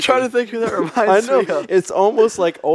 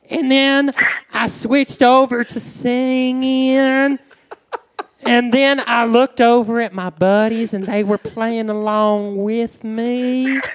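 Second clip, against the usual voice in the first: funny, silly, creepy put-on voice; 5 semitones higher than usual. Greeting a caller on the podcast in a funny put-on voice: funny creepy put-on voice. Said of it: "you with your funny voice".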